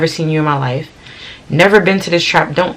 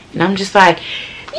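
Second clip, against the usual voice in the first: ordinary talk, nothing marked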